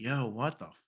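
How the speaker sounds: mock, barely audible, irritated, annoyed grumble. Speaker retelling sitting in the back while others kept asking, mock-annoyed. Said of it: "getting annoyed, visibly, like, annoyed".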